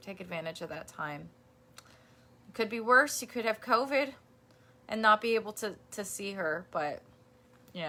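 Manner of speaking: emotional, voice catching, choked up, near tears. Advising a listener about time with family, emotional, near tears. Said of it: "I'm going to make me cry".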